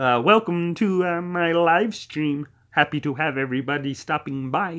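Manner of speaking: nasal puppet frog voice. Greeting viewers to the live stream: Kermit the Frog voice. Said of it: "a little, uh, Kermit the Frog for everyone".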